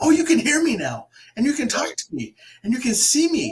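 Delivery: high, loud, eager, excited voices. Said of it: "people are like".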